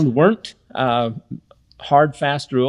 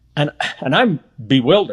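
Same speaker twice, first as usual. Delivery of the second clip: ordinary talk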